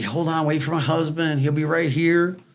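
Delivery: put-on screaming, crying woman's voice. Retelling a repo job, acting out the lady who came out, imitating her screaming and crying. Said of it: "She's screaming, crying".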